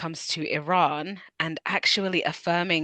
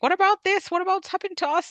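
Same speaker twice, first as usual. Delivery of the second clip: put-on Irish accent, pitched way up; 14 semitones higher than usual. Explaining where a word comes from, voicing Irish people in an imitated Irish accent. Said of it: "sorry for my Irish accent".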